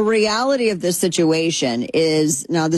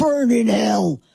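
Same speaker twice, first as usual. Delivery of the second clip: high, mock furious, outraged squealing rant. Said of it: "and people are like".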